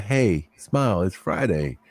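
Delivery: slow, bright, friendly, cheerful delivery. Retelling what they said to a coworker: imitating own cheerful greeting. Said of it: "Didn't demand it".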